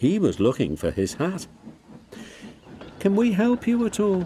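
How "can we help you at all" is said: syrupy, sugary-sweet, polite voice, pitched very high. Two characters offer their help, sweetly. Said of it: "asked Duck and Stepney sweetly".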